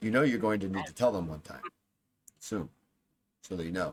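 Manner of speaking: low, hushed, confiding tone. Retelling how someone turns to Bajra with advice, in a low hushed tone. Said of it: "in a low hushed tone, hushed tone says".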